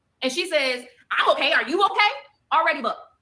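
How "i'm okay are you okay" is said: play-acted, curt, snippy, sassy tone. Retelling a reply to someone who asked if she was okay: imitating someone with attitude. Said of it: "Already with an attitude".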